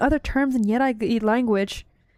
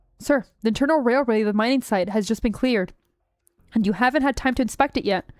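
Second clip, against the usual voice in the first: normal talking voice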